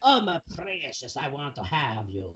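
soft, hushed, creepy vampire creature voice. Joking with others about making Gollum more like Dracula; Gollum-Dracula voice. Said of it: "Gollum Dracula".

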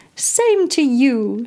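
voice pitched way up, high. Reading a story, an old man answering a greeting: high-pitched voice. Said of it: "said he in a high-pitched voice".

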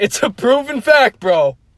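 put-on New Jersey bro-style accent. Joking with a co-host about gym weights, Jersey accent. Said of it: "as soon as the Jersey accent comes out".

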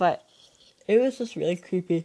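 talking through a yawn. Telling listeners about a creepy visitor at the door, yawning while talking. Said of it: "Hold on, I'm yawning".

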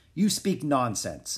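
ordinary delivery, nothing marked

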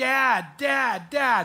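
put-on loud, tearful crying yell in little girl voice. Telling a story, the speaker acts out a little girl running to her dad: retelling a crying yell. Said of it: "she's crying, and she's yelling".

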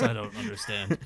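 put-on brute monster voice. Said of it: "Why is Hulk talking like this?".

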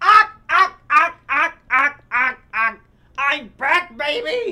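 shrill, very high, loud squawking parrot voice. Retelling a story, the speaker does what the parrot says in a parrot voice. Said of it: "The parrot goes".

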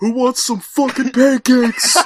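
very shrill, very high, very loud holler. Retelling how a kid named Max yelled in class: imitating Max yelling. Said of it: "and he yells".

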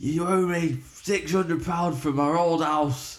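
acted-out shout. Retelling a man shouting up at a balcony at 1 a.m., imitating a man shouting. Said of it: "he's shouting".

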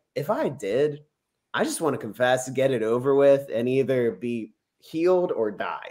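usual speaking voice

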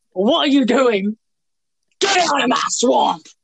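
high angry ogre voice. Talking about editors, the speaker breaks into a mock-angry Shrek impression. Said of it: "If you can do a better Shrek impression".

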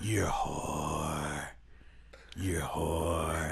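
stage whisper. Retelling what he whispered at the character Anna before action, loud whisper. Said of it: "He's whispering this".

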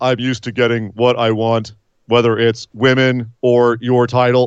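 flat, flaccid, level monotone with no charisma. Mocking a wrestler's lines: imitating Damian Priest's flat, casual delivery. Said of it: "his delivery was".

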